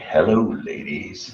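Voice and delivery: breathy, whispered delivery. Teasing another speaker by imitating Val Venis's greeting. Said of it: "you're all like".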